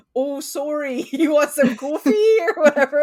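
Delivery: high, loud, thick Canadian accent.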